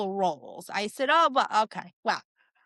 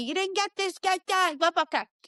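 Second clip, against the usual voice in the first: put-on yelling, higher pitch; 8 semitones higher than usual. Retelling how the people being filmed ordered the filming around: imitating people yelling. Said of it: "they're yelling at me".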